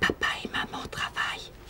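soft, hushed, very quiet, secretive whisper. Hiding and telling someone something in a whispered voice. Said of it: "si je parle en voix chuchotée".

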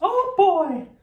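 very high-pitched little cartoon squeak. In an impressions guessing game, the speaker names then performs a Mickey Mouse voice. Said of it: "Mickey Mouse".

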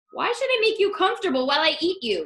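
animated, swooping, demanding tone. The coyote answers Borreguita, who asks to be swallowed whole: demanding. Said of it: "Demanded the coyote".

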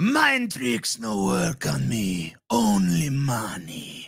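alien creature voice, pitch swooping up and down. Asked for his strongest impersonation, Sebulba impression. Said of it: "I can kind of do Sebulba from Star Wars".

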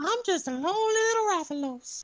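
creepy high cartoon voice. Voicing a Rathalos for the others during a hunt; Herbert-like creepy voice. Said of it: "you're sounding like that pedophile guy".

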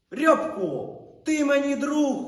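very loud, high-pitched, hurt, offended cry. Narrator reads a man crouched at a dog's kennel calling to the dog: offended shout. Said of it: "Закричав Рудий ображено".

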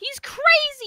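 high, loud scream. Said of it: "Why are you screaming?".

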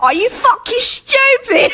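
put-on very high, shrill, fed-up, angry British accent. Joking about how british people get mad: angry mock british accent. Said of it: "British people get mad and be like".

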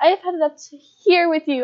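put-on small, high, prepubescent little kid voice. Retelling talking back to people demanding food, in a small prepubescent voice. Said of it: "in my small little prepubescent voice".

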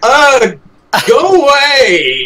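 frantic, very high, panicked shout. Describing a character's panicked spell cast: panicked shout. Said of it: "It's more panic and it's like".

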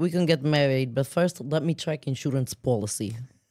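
loud, played-up, put-on Russian-accented English. Showing off a Russian accent in a shared comedy bit: Russian accent. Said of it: "I have a Russian accent".

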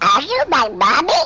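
little put-on duckling voice. Asked to do their one talent, speaker performs the little duckling voice. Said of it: "do the little duckling voice".

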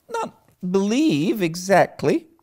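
hesitant stumbling voice. Asked whether she believes her own imaginings, she answers, faltering. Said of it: "faltered Anne".

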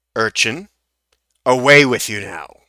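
angry tone. Game master voicing a character who turns to dismiss you, angry. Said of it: "this guy's general anger".

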